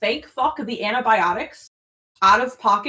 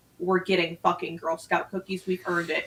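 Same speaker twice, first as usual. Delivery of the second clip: put-on, low, dead-serious, no-joke tone; 4 semitones lower, 5 dB quieter than usual. Retelling own words in the truck: imitating own most serious tone. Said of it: "most serious tone".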